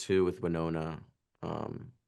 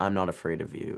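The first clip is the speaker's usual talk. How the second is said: usual speaking voice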